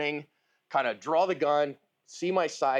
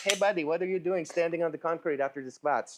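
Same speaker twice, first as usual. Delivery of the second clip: put-on speaking with German accent. Voicing their own sore body after morning squats, in a German accent. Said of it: "I don't know why my body speaks German, but you know, in a German accent".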